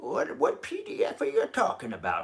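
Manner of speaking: put-on elderly man's voice. Imitating viewers asking about a link: old guy voice. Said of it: "I don't know why I'm using old guy voice".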